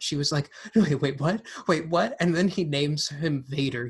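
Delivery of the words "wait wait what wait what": put-on panicked, confused, totally baffled outburst. Retelling a young viewer's reaction to a film scene: imitating a girl freaking out. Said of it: "this girl was freaking out".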